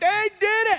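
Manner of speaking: mock, very high, freaked-out yell of alarm. Retelling how the people reacted to the bat: imitating people yelling. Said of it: "They were yelling".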